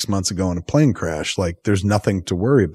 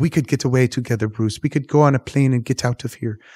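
put-on French accent with higher pitch; 5 semitones higher than usual. Retelling a movie scene, voicing the woman pleading with him, french accent. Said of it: "I mean she's just French accent".

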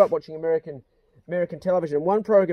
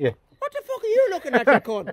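put-on, high-pitched Irish accent; 9 semitones higher than usual. Imitating the dog Pace talking: high-pitched Irish accent. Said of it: "he's got a high pitch accent".

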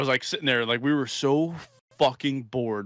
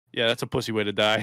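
flat, deadpan voice, lower pitch; 3 semitones lower than usual. Recounting a conversation, quoting own answer to his fear, retelling a deadpan reply.

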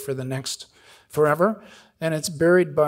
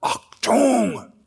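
put-on, really loud, high shouted word; 9 semitones higher, 4 dB louder than usual. Retelling what the guy at the landing helicopter said: imitating a loud shout. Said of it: "really loud".

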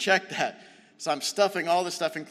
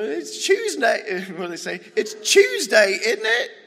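loud, slow, horrible put-on English accent; 7 semitones higher, 8 dB louder than usual. Quoting what people say about it being Tuesday, in a bad English accent. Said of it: "Sorry, that was a horrible accent".

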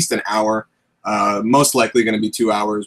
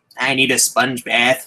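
put-on old man's voice; 2 semitones higher than usual. Asked by a livestream viewer, doing the Palpatine voice. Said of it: "can you do the Palpatine voice".

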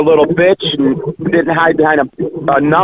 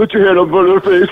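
mocking put-on voice; 3 semitones higher than usual. Repeating the other speaker's suggestion back at him: mocking imitation of the other speaker. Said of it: "That was a spot-on impression".

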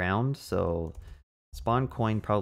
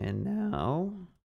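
cracking voice, higher; 9 semitones higher than usual. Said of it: "my voice cracked so hard right there".

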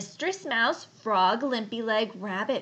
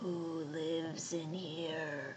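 very quiet, low, hushed, gruff grunting boar voice; 6 semitones lower, 11 dB quieter than usual. Reading a story aloud, voicing the boar who arrives at the mitten, grunting. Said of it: "he grunted".

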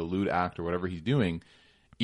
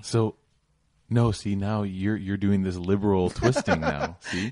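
put-on mock sarcastic voice; 4 dB louder than usual. Questioning the other speaker right after announcing a sarcasm alert: put-on sarcastic voice. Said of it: "That's sarcasm alert coming".

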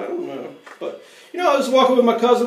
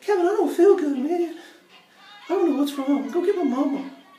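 put-on high small child's voice, before it broke; 9 semitones higher than usual. Retelling feeling sick on the porch as a boy, in a little kid's voice. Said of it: "But a little kid's voice".

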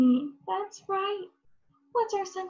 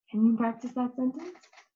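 normal talking voice

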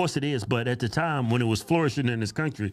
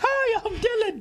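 very high, put-on sultry woman's voice. Teasing the other speaker about his voice trick, imitating Dylan's fake woman voice. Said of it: "trying to talk like a woman".

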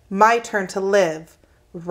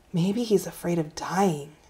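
hushed, soft, whispery voice; 2 semitones lower, 7 dB quieter than usual. A girl answers the narrator's mother's question, hushed and whispery. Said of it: "Jessie's voice got hushed and whispery".

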